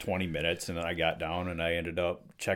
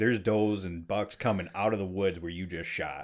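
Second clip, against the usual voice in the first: ordinary talk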